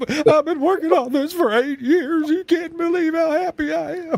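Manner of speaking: very high, bawling sob, blubbering through tears. Recalling a man pushing the button as the radio came on, imitating him bawling. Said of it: "he just started bawling".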